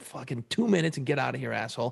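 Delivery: ordinary delivery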